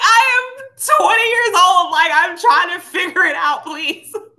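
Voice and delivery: high, loud voice while laughing.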